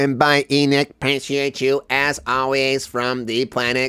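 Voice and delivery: deep, very low, soft, hushed put-on alien voice. Saying goodbye at the end of the show, in an alien voice. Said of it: "that's my alien voice".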